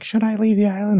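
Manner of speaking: very high, mopey, sad little creature voice. Retelling what a squirrel villager on the speaker's island asked: mimicking a sad villager. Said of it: "She was all sad".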